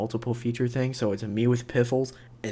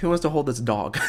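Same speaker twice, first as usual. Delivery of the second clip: normal talking voice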